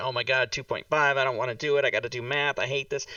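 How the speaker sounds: ordinary delivery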